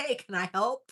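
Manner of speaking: dopey, clueless, friendly, happy dog voice. Voicing a friendly pet dog welcoming a burglar: voicing Bert the dog. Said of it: "he'd be like".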